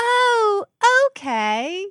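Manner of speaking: very high, loud, terrible put-on British accent. Recapping a scene, giving [name]'s reply to Murphy in [name]'s terrible British accent. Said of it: "My terrible British accent".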